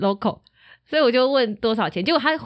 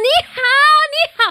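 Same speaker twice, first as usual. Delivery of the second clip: very loud, shrill, high-pitched; 7 dB louder than usual. Retelling answering street drivers in chinese: very loud reply. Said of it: "我就很大声的回答说".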